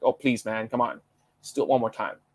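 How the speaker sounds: ordinary delivery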